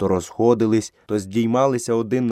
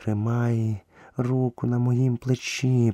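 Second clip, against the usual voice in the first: soft half-whispering; 4 dB quieter than usual. As the boy tries to pull the two great beasts away, half-whispering. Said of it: "прошепотіла Багіра".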